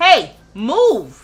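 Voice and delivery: loud yell. Telling someone to move, then apologizing to listeners: yelling. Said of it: "Sorry for yelling".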